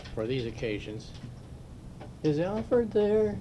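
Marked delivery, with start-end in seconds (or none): 2.2-3.4 shrill, very high, very loud put-on phone voice. During a meeting, a man phones and asks for someone, very high-pitched put-on voice. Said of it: "he'd say in a very high-pitched voice".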